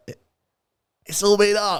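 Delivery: fake Scottish girl accent. Urged to try again, a guest attempts a girl's Scottish accent. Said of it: "Try it again".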